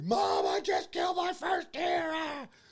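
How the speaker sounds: very high, loud, thrilled shrieking yell. Retelling screaming to his mom over a walkie-talkie, reenacting his excited scream. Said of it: "So I'm screaming".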